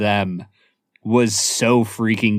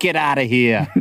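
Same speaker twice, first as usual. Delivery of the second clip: put-on Boston accent; 2 semitones higher than usual. Acting out the priest's sister answering the door, in a boston accent. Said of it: "it's a great Boston accent".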